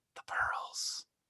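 quiet under-the-breath mutter. Retelling a line said during a mugging scene, muttered under his breath. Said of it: "Will just under his breath goes".

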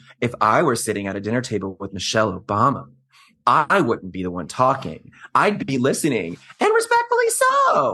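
lofty, self-deluded, swooping sing-song. Quoting a reality TV cast member at dinner: imitating Larsa Pippen's deluded tone. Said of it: "the delusion in her voice".

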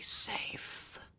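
faint, soft, breathy whisper. Voicing an eyeless lady who speaks before she disappears: whisper. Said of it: "Almost like a whisper".

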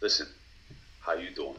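low, bad New York tough-guy accent, laid on. Greeting the group while doing a Joey Tribbiani impression. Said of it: "That's Joey Tribbiani, and you can't even do it right".

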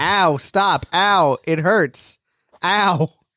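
mock, repeated, slow, drawn-out pained ow cries. Retelling how Yajirobe keeps crying out in a scene: imitating Yajirobe crying out in pain. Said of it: "The way that Yajirobe keeps saying".

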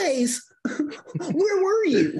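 high, laughing, whiny voice with no bass.

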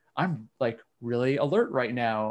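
plain

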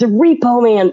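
loud urgent shout. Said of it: "And he's like".

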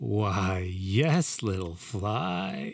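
warmly chuckled, with the word "fly" stretched out. Mr. Erickson answers the narrator's question about his wife, with a warm chuckle, like baby talk. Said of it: "he chuckled warmly, like he was talking to a baby".

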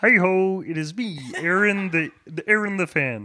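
high cartoon frog-puppet voice. Greeting the others on joining the pod: Kermit impression. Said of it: "making my, uh, best Kermit impression".

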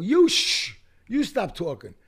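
angry, pissed-off, high and swooping. Retelling his reply to a woman who shushed him: retelling an angry retort. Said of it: "So now I'm pissed off".

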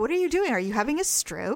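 normal talking voice

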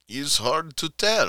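put-on Russian accent. Answering a question about fantasy fiction: Russian accent. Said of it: "That was my Russian voice".

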